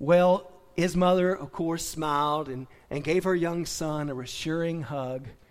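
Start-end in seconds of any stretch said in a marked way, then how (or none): none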